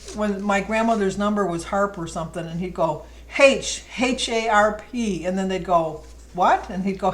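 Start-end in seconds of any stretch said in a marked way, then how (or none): 3.4-5.3 loud, high Irish pronunciation of H as haitch. Retell him spelling out the name Harp to people who ask what, imitating his Irish H. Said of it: "He always called it H, which is Irish".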